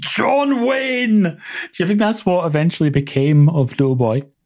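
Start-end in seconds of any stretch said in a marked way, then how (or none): 0.0-1.2 very high-pitched shouting. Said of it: "launches into the canteen and shouts".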